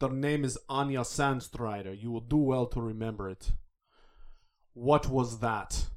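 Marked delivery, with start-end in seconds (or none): 0.0-3.5 put-on Russian accent.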